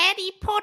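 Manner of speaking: very high, squeaky villain voice.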